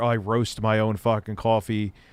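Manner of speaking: ordinary talk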